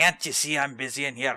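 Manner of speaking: put-on poor Irish-Scottish accent. Grumbling at someone to go away, in a self-described bad Irish-Scottish accent. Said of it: "That's my bad Irish Scottish accent".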